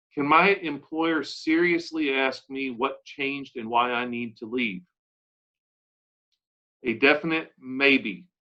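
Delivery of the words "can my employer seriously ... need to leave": ordinary delivery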